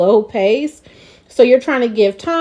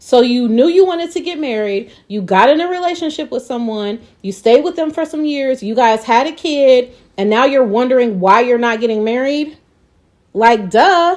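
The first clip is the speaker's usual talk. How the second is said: mock patronizing, condescending, shaming, talking-down tone; 2 semitones higher than usual. Retelling how an advice giver answered her question: imitating a condescending tone. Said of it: "her delivery and everything, her tone was like".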